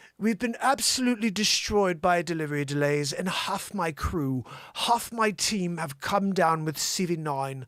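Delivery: put-on proper English accent. Reading out a quoted statement, in a put-on proper English accent. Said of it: "Let's do a proper Englishman".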